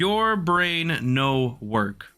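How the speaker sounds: very slow, deliberate, spelled out word by word. Speaker repeats an insult aimed at players using a skin, said slower. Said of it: "Allow me to repeat myself".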